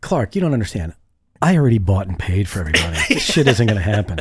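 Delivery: mock smug, cocky, arrogant know-it-all swagger. Mocking the negotiator's words, imitating a cocky attitude. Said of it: "what an attitude".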